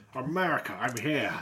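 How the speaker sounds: grand, put-on statesman voice with formal address manner. Joking about thin, crispy presidents, speaking as the president: put-on statesman voice. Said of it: "it's just my statesman voice".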